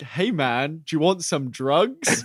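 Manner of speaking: put-on, generic American accent. Quoting a line that stuck with them: American accent. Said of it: "But like in like a American accent".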